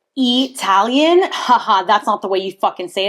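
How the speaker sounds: acted, taunting, mocking know-it-all commenter voice. Retelling a comment on a video about Italians: imitating a mocking commenter. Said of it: "Somebody was like".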